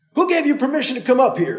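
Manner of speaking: annoyed, irritated, high-pitched shout. Narrator voicing a man confronting a newcomer, shouting, irritated. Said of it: "the man shouted, irritated".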